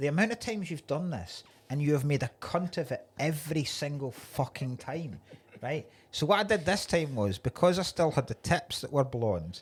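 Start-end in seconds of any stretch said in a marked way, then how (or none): none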